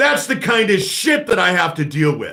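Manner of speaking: heated, shouted ranting. Ranting to listeners about a man they can't trust, yelling. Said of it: "I need to stop yelling".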